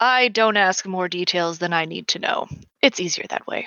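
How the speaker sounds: normal talking voice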